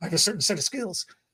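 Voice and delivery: confident action-movie hero delivery. Joking about sounding like a movie character: Taken guy voice. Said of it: "I sound like the Taken guy".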